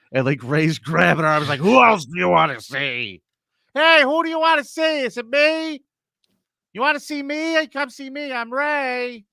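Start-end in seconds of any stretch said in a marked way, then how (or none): 1.6-9.2 very high, slow, sing-song coaxing, pitch swinging up and down. Imitating the man from a funny video grabbing a woman: Ray DeVito impression. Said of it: "my imitation of Ray DeVito".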